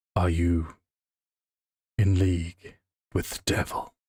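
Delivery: deep rumbling voice, sounding distant. Retelling the distant reply to a shouted call, in a very deep rumbling voice. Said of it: "a very rumbling voice, very deep, but very slow".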